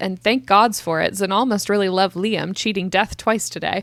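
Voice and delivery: ordinary talk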